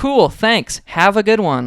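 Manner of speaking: kinda dickish, sarcastic, high and swooping. Retelling a reply to a stranger: retelling a sarcastic reply. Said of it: "I said it kinda sarcastically".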